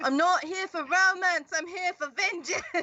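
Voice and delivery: very high-pitched, loud yell. Asked whether the line is said in character, yelling across a bar. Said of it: "I'm gonna yell across the bar".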